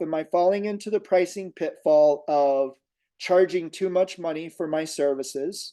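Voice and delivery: ordinary talk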